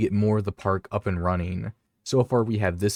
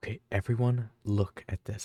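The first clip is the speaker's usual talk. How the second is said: hushed, quiet whisper; 6 dB quieter than usual. Calling on everyone to look at a dinosaur, whispering. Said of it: "I don't know why I'm whispering".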